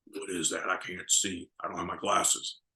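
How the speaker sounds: soft, rough, gravelly rasp, poorly done. Speaker retells showing Bob Orton his action-figure card; gravelly Bob Orton impression. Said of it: "in his gravelly voice".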